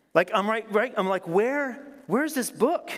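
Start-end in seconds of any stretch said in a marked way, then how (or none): 1.2-2.9 put-on raised voice, much higher pitch. Alone at home, searching for a lost book, retelling raising voice at self. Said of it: "I start like raising my voice to myself".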